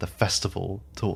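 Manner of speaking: plain reading voice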